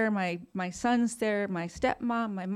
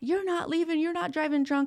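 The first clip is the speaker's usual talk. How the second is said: mock yelling, pitched up; 8 semitones higher than usual. Retelling how their dad yelled at them, retelling dad's yell. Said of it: "my dad starts yelling at me".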